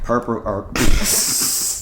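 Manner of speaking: very slow, stretched-out, fumbled, stumbling speech.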